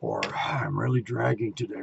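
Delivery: mock tired complaining tone. Demonstrating an example of a visual complaint, imitating a tired complaint. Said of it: "You wait for a complaint".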